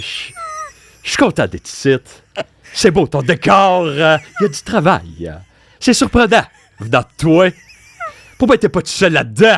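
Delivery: high, loud comic voice with swooping pitch. Asked for your best imitation of a comedian, do a François Bellefeuille impression. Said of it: "Fais-moi ta meilleure imitation d'un humoriste".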